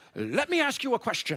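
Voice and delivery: put-on high, annoying, pesky little kid voice. Retelling what a man asked on meeting you, in the Polar Express annoying kid voice. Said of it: "had the voice from that annoying kid".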